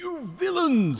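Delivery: impassioned, very high-pitched, shrill shouting. A narrator reads a rat shaking both fists after the cart is wrecked, shouting. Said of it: "he shouted".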